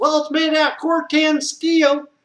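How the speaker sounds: put-on Southern drawl, very high and loud. Quoting a caller who insists on burying containers: imitating a southern accent. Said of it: "people that are so stupid have to have Southern accents".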